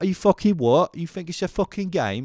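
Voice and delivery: put-on jokey high Cockney accent. Joking around with mates, doing the Cockney accent. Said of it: "we just do the the Cockney accent".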